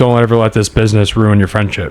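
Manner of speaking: plain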